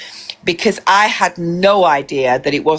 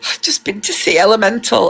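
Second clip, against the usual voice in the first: put-on tearful crying voice, pitched higher; 5 semitones higher than usual. Retelling what he said on coming back from a film: imitating someone crying. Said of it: "he's really emotional, he's crying".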